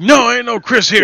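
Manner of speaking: acted-out, very high, loud, angry, annoyed voice. Retelling a stranger's reply to a wrong-number phone call, retelling an angry reply. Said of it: "he was real pissed off".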